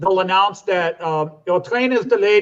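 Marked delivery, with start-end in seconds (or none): 1.5-2.4 English in a put-on German accent. Imitating a train delay announcement in germany, in a german accent. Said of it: "I don't know why I do a German accent".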